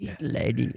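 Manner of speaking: quiet, soft, hushed sports commentator voice. Showing how a partner's commentary voice goes: imitating a soft commentary voice. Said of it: "you gotta say it soft".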